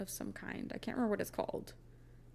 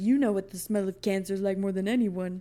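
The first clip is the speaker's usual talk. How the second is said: put-on blustery father voice, louder; 11 dB louder than usual. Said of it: "his, like, Donald Trump father impression".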